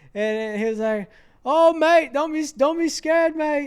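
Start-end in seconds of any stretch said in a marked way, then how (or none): 1.4-3.7 put-on Australian accent, higher and louder. Retelling what an older man said while laughing: Australian accent. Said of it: "that Australian accent".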